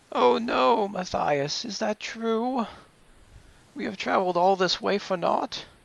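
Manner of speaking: frail, fragile, very high voice. As Cintiq, speaking from the back to Matthias, in a frail voice. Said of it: "making her voice kind of sound frail".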